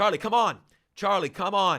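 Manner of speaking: put-on high scream. Recounting a race to the hospital, speaker retells a man calling to Charlie: retelling someone screaming. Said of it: "and he's screaming".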